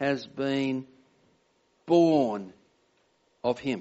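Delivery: the word born stressed. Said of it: "I'll emphasize the word".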